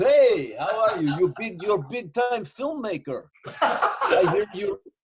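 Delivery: put-on laid-on Russian accent, a touch high. Telling a story about a man from the van who talked to him: imitating a Russian accent. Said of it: "he's talking like this to me".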